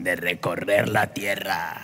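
devil voice, pitched right down, very low and hushed. Preaching on Job, the speaker gives Satan's reply to the Lord in a devil voice. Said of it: "vamos a hacer voz de diablo".

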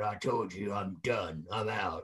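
very low, slow mutter, muffled as around a cigar. Retelling a retired veteran's refusal to come back: imitating Berserker talking with cigar in mouth. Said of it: "with a, you know, cigar in his mouth".

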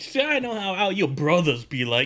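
put-on hillbilly comedian voice with rural twang.

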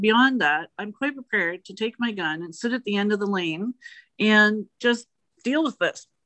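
normal talking voice

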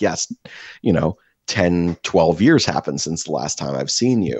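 normal talking voice

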